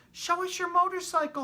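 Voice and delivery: very high, squeaky little voices. Narrator voicing the little cousins crowding around Ralph, in squeaky little voices. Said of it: "they squeaked".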